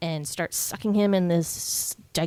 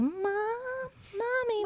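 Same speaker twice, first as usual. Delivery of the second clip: put-on little child voice, higher and quieter; 6 dB quieter than usual. Retelling a movie scene heard over the TV: Carol Ann's little voice. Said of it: "Carol Ann's little voice".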